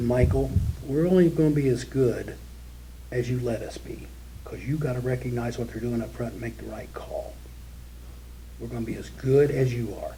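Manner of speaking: very calm, soft voice in a very low tone. Retelling what he said to michael while the four coaches stood there, imitating a real calm voice. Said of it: "He had this real, real calm voice".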